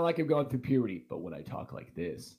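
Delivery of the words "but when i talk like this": smooth, hushed, breathy near-whisper. Comparing his two ways of talking for a listener, smooth voice. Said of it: "I sound smooth".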